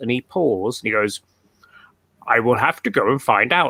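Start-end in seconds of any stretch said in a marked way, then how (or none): 2.3-3.7 put-on fuzzy, bear-like voice. Retelling a man's reply on a recorded call: Maniko's fuzzy bear voice. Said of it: "in his fuzzy bear voice".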